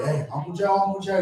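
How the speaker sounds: put-on eager kid voice, bursting with excitement, calling out. Retelling a story about a nephew who comes up: imitating an excited kid. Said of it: "He's all excited".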